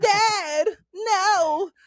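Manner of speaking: very high, shrill, whiny crying wail, no stretched. Mocking a cartoon character's dub voice: whiny little Gohan voice. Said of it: "that little voice".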